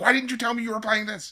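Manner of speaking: high-pitched mock yell. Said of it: "I yelled at Jay".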